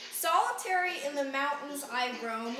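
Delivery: ordinary delivery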